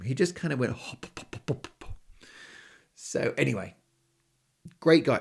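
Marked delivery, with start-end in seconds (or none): 0.7-1.9 mumbled, unclear, hushed, breathy whisper. Retelling how a nice guy said his own name, imitating a mumbled name. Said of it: "doesn't know how to say his own name".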